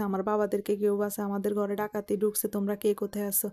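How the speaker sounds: ordinary talk, nothing marked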